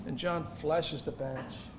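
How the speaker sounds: ordinary talk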